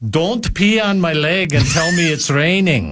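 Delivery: put-on heavy Swedish accent in an old man's voice. Quoting a grandfather's saying to someone lying: imitating old swedish grandfather's voice. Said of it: "Using that very voice?".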